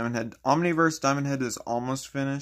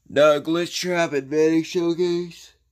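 yawning, higher and louder; 5 semitones higher, 7 dB louder than usual. Telling the audience when the next showcase will be, yawning while talking. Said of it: "Sorry, I was yawning and talking".

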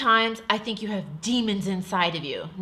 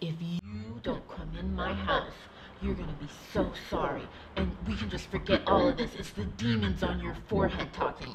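hushed, grave, deadly earnest tone, acted out; 7 dB quieter than usual. Retelling what a man said to them, quoting him, very serious. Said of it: "this is how he said it very serious".

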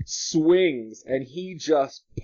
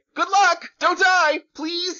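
squeaky, very high goblin creature voice; 3 dB louder than usual. Narrating a scene, a goblin calls out after locking the door, goblin voice. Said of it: "you hear a goblin voice say".

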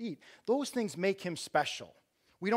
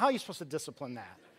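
ordinary delivery

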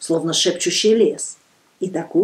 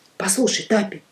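plain reading voice

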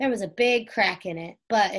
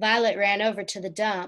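ordinary delivery, nothing marked

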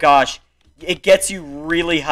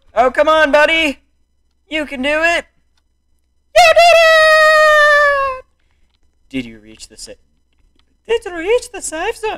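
fake Irish accent, much higher, louder, slower; 4 dB louder than usual. Player cheering on a game character through a parkour section, in a bad Irish accent. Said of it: "I forgot I gave him an Irish accent".

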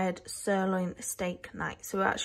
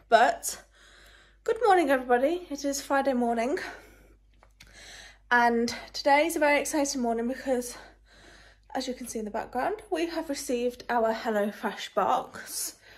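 winded, breathless voice; 4 semitones higher than usual. Greeting everybody on Friday morning right after walking upstairs, out of breath. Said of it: "No idea why I'm so out of breath".

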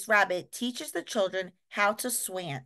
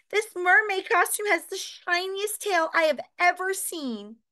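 delighted squeal, much higher; 9 semitones higher than usual. Narrator reading Peppa's words as she finds the costumes, squealing with delight. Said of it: "she squeals in delight".

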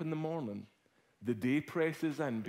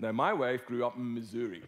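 usual speaking voice

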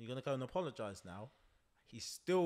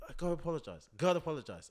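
mock-angry throaty guttural man's voice, higher pitch; 4 semitones higher, 6 dB louder than usual. Retelling a man telling his kid to apologize, imitating an angry man, throaty. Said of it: "let's get into the back of the throat".

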